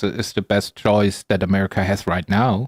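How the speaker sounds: normal talking voice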